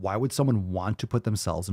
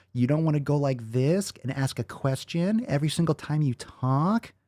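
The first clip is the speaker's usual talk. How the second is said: upspeak, pitch rising on the final "talk"; 7 semitones higher than usual. Warning listeners against ending sentences on a rise, in upspeak. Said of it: "can you not talk like this at the end of a sentence".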